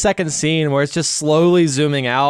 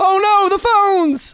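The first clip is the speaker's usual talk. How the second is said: play-acted slow shrill movie yell, very high, drawn out. Retelling a horror film scene with a smashed phone: imitating a character yelling. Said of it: "some character yelling".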